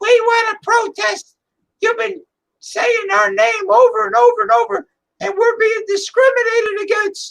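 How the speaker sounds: troll voice, pitched very high. Joking about trolls protesting, in a high-pitched troll voice. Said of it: "gonna go with their high pitched voice".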